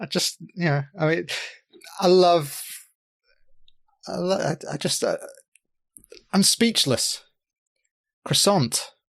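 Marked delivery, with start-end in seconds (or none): 8.2-8.9 British pronunciation of the word croissant. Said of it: "we say it croissant".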